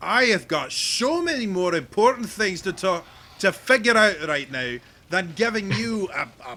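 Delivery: loud, high, furious shout in an angry dwarf voice.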